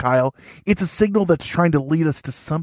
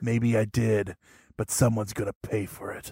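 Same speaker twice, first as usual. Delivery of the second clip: very low, hushed 80s action-hero voice; 8 semitones lower, 8 dB quieter than usual. Recording an episode intro, answering an accusation in an 80s action hero voice. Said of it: "Why are you talking like an 80s action hero?".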